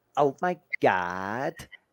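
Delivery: put-on American Valley Girl accent, rising at the end. Speaker shows the american accent that suits her: valley girl accent. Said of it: "Do you know what American accent gets great on me?".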